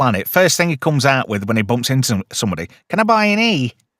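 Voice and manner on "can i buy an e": put-on, pitched-up Manchester accent. Imagining the Doctor greeting someone on a planet: Manchester accent. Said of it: "that Manchester voice".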